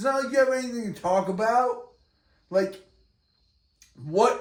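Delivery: exasperated, annoyed, high shouting. Arguing with the other speaker, who says they're still shouting: shouting. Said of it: "I'm shouting because you're annoying".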